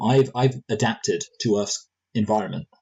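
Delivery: ordinary delivery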